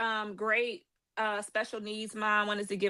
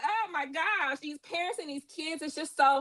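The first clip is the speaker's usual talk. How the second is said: high, tearful voice on the verge of tears; 6 semitones higher, 3 dB quieter than usual. Thanking everybody in the room for their support, about to cry. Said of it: "I'm about to cry".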